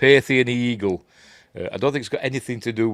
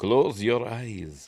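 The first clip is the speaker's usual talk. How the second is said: soft, seductive Eastern European woman's voice; 5 dB quieter than usual. Describing a film scene, the speaker voices the woman in a sexy Eastern European woman voice. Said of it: "but in a sexy woman voice".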